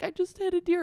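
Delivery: very high-pitched, tearful sobbing words. Retelling telling a stranger after a crash: retelling own sobbing. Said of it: "I was, like, sobbing".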